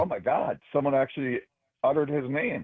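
normal talking voice

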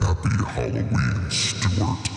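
creaky, spooky, low and rough monster voice. Greeting someone on a radio show for Halloween; scary monster voice. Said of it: "should I do the monster voice for Halloween?".

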